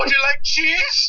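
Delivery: put-on very high, eccentric Indian accent. Retelling what a man asks customers as they order, in an eccentric Indian accent. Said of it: "the most eccentric Indian accent I think I've ever heard".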